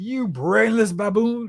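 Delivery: high pompous aristocratic villain. Praising a cartoon's version of a villain, quoting Doctor Doom in a pompous aristocrat voice. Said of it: "had that pompous aristocrat voice".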